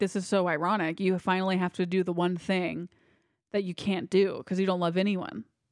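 ordinary delivery

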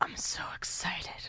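breathy, hushed whisper under the breath. Joking about waking up and whispering to oneself: whispering to oneself. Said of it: "I just whisper to myself".

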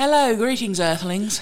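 alien character voice with an English accent. Turning around and greeting everyone as asked: english alien voice. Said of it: "Wow, an English alien".

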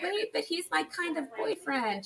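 high-pitched put-on voice. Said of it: "she's kind of like".

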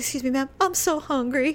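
near crying, voice straining to hold back tears. Retelling what a man said when she looked up, imitating him trying not to cry. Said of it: "he's trying to like not cry".

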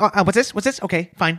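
rapid, rattled-off speech. Retelling Quentin's reply to the studio about the title: Quentin Tarantino impression. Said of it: "This is a really good Tarantino impression".

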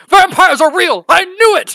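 very loud, very high, shrill piercing scream. A player's character waking up alive and screaming. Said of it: "I'm going to start screaming".

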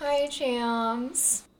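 dejected voice. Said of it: "you sound like [name] on a bad day".

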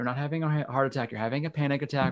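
ordinary talk

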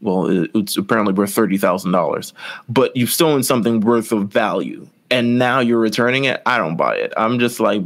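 ordinary talk

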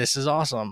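plain

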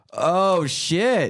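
put-on play-acted thrilled kid voice, high, gleeful, excited. Retelling how he says it the second time: an excited 'oh, shit'. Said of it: "the second time he says it with more like".

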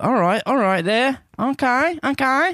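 put-on tough Australian accent, very high. Showing the line that gets into an impression: badass australian impression. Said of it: "my badass Australian expression, expression, impression".

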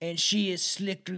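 slow, mock, put-on Russian accent. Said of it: "how do you do a, lo-, a Russian accent?".

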